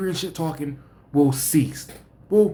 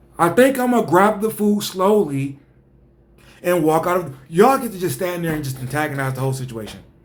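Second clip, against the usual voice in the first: ordinary delivery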